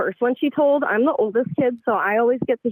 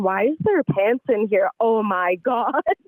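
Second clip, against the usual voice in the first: plain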